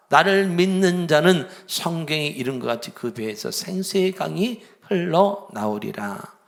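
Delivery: loud, high proclaiming voice.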